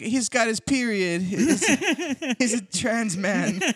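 put-on Jamaican accent, very slow, very high. Retelling what the lady at the bank said, imitating a Jamaican accent. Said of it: "What accent was that?".

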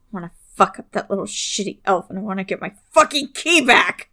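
fast, rattled-off mutter under the breath. A player voices their character waving a hand over the gun, muttering. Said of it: "I think I'm just kind of muttering".

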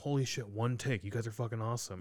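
ordinary talk

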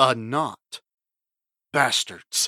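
mock-deadpan delivery. Recapping a film scene, quoting an actor's line, imitating a deadpan delivery. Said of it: "Just as deadpan as you can get".

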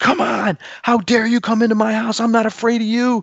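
all-out high-pitched yell, acted out. Retelling yelling inside a closet at home, retelling a yell. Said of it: "and then I'm done yelling".

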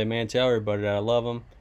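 ordinary delivery

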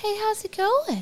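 very high-pitched, slow, lifting at the end. Imitating the other speaker's phone greeting: imitating a high-pitched greeting. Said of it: "with that high-pitched shit at the end".

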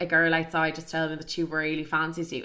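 ordinary delivery

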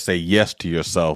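ordinary delivery

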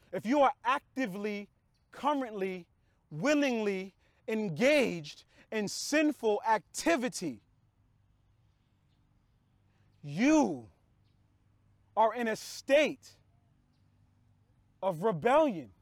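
slow, drawn-out, unhurried pace. Addressing listeners, saying it slow so they can think, speaking slowly. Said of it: "I say it slow".

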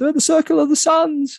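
mock frightened, very high-pitched, scared blurt. Retelling a scene where the one next to him suddenly speaks: mock blurting out. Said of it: "blurts out, she's like".

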